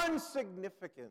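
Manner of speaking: sudden, very loud, startling shrill scream. Retelling a Calvin and Hobbes strip, Calvin under the stars, retelling Calvin's scream. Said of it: "Sorry, I made you jump".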